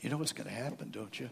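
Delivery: half-whispered, hushed, close and secretive. Retelling how Satan leaned over to the speaker's ear: Satan half-whispering. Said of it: "He's whispering in my ear".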